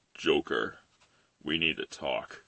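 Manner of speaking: very low, soft, hushed hero voice. Doing one impression after another, Kevin Conroy Batman impression. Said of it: "My best impersonation of Kevin Conroy's Batman".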